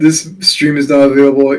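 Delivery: plain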